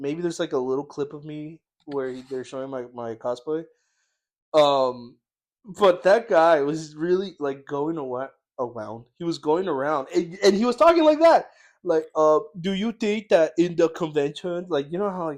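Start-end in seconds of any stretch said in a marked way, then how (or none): 12.6-14.7 put-on baby-talk voice, higher pitch. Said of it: "baby talks now".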